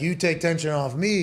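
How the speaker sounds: put-on Polish accent. Retelling what Seabass said after the arrest, imitating Seabass's Polish accent. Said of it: "he's got a Polish accent".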